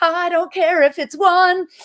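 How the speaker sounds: high, slow, loud defiant cry. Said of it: "you're like".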